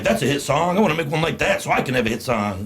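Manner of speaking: plain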